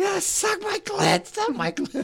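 shrill ecstatic shriek, very high, screaming moan. Retelling a phone blaring in public, imitating a woman screaming. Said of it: "this woman is screaming".

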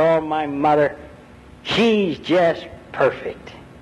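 joyful, adoring, greatly happy, loving voice. Retelling a boy's answer to a sales clerk, imitating a great happy voice. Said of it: "with very loving eyes and a great happy voice".

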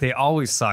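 plain

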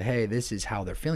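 normal talking voice

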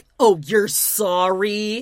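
put-on loud, biting sarcasm, sorry drawn out. Imitating someone repeating an apology back: imitating a sarcastic reply. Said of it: "It would be sarcastic".

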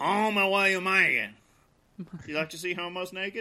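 put-on Cajun accent. Discussing doing Cajun voices, a speaker slips into a put-on Cajun accent. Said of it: "I immediately slip into Waterboy or Joe Dirt".

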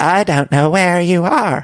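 clumsy, badly done put-on woman's voice. Retelling James's phone call, the speaker voices Raquel's reply in a bad Raquel impression. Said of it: "that was a bad Raquel".

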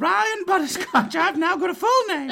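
tiny, squeaky elf voice, very high and loud. Role-play elf fallen out of the sleigh replies to a player, Ryan Butterscotch elf voice. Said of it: "You pick up this tiny little guy. He's maybe 2 feet tall".

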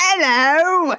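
put-on terrible Cockney accent, no H on "hello", pitched high. Retelling how the parents answer the phone: worst cockney accent, dropping h's. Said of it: "dropping all of their H's".

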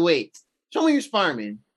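very skeptical, doubtful voice with swooping pitch. Retelling a movie scene, imitating MJ sounding skeptical. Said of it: "super skeptical".

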